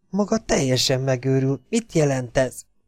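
whispering. [name] whispers to Bobby.

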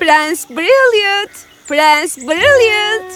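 loud shouting, calling out. A lady calling for her best friend, the prince, shouting. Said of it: "Bağırmayı bırakır mısın?".

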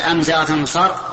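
normal talking voice

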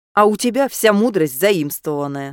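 snapping, snapped delivery. Kian answers his chatty familiar John Dee, snapping back. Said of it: "огрызнулся Киан".

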